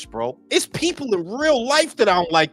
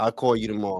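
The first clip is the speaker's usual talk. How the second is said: flat deadpan monotone, lower and quieter; 10 semitones lower, 5 dB quieter than usual. Showing how to stay monotone in any situation: deadpan. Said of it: "Deadpan like a motherfucker".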